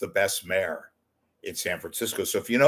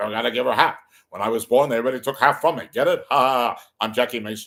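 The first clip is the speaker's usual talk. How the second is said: fast, rattling comic patter; 3 semitones higher, 5 dB louder than usual. After trying other impressions, you notice you sound like Jackie Mason and tell jokes in a Jackie Mason voice. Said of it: "I sound like Jackie Mason".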